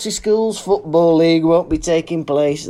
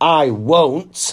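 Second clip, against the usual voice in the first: sulky, huffy, annoyed tone. Retelling a customer's reply before storming off: imitating a sulky annoyed reply. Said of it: "storms off in a mood".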